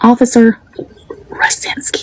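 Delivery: whispered under the breath, hushed. Saying a name while another speaker listens: whispering. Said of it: "Why is she whispering?".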